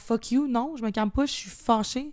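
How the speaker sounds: ordinary delivery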